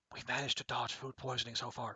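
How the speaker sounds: very quiet hushed half-whisper, low and soft. Player recapping the run so far, half-whispering so the game doesn't hear. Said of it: "I'm going to whisper this so the game doesn't hear me".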